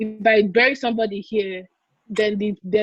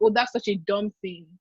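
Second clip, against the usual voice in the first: put-on heavy sarcasm, scornful tone; 4 dB quieter than usual. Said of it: "she'll say it in such a sarcastic way".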